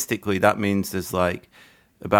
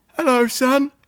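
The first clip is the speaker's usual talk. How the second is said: very high-pitched, frail, delicate voice; 4 dB louder than usual. Retelling what an old man said on a park bench: Dave's fragile high voice. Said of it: "he's got a very fragile voice".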